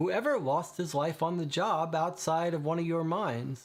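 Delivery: ordinary delivery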